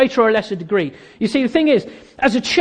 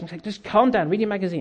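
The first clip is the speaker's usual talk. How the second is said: ordinary talk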